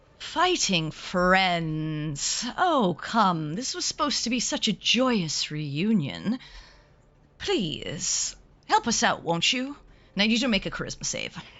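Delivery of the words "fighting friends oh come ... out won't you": smiling, charming delivery, much slower. Game master voicing a character who smiles at the player's character, smiling and charming. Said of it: "as he sort of smiles at you".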